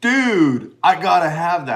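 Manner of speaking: rough put-on voice, loud and high-pitched. Retelling what Josh said on seeing the big head: not-best Josh impression. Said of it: "That's not my best Josh impression".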